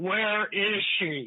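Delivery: play-acted large, big, demanding voice. Retelling waiting in the emergency room when someone arrives asking for her, imitating Art's big booming voice. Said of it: "I hear this big booming voice".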